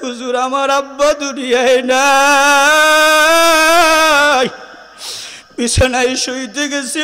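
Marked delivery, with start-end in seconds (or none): 0.0-4.5 put-on pitiful tearful child crying, louder. Retelling an orphan student's words: imitating a child crying pitifully. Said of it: "করুণ সুরে কান্দে আর কয়".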